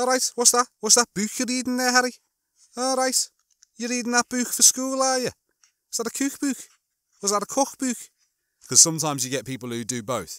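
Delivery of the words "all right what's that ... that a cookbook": put-on high Scouse grandmother voice, Liverpool accent. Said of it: "my grandparents, um, were Scousers".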